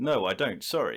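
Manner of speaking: put-on English accent, each word spoken clearly. Retelling answering a woman who asked if she worked there, clear English accent. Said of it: "in my English accent".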